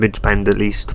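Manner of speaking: plain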